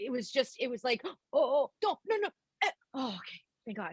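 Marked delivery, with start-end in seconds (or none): 1.0-3.9 mock vocal noodling, wandering around hunting for notes. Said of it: "It was kinda like that".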